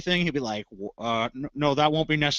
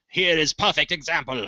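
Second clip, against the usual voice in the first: clumsy, bad, fake put-on German accent. Imitating an old propaganda film narrator: bad German accent. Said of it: "I can't do a German accent".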